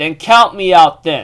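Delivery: ordinary talk, nothing marked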